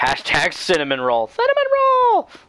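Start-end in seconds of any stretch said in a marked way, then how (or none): 1.3-2.2 very high-pitched, loud, squeaky squeal. A streamer saying the chat trigger phrase, in a really high-pitched voice. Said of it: "say cinnamon roll in a really high pitched voice".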